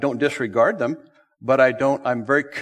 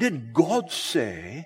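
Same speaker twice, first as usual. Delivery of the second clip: put-on pious stained-glass intoning, swooping; 4 semitones higher, 4 dB quieter than usual. Teaching about the serpent's first question, quoting it in a stained-glass voice. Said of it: "Did a stained glass voice".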